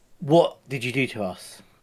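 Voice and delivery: deliberate, slow, seething, really angry tone. A player confronts the man he has been looking for; really quite angry. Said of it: "Really quite angry".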